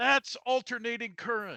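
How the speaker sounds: high-pitched, loud yell.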